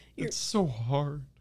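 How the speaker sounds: put-on tearful voice. Being scolded in a scene for not using memory, fake crying. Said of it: "Are you crying?".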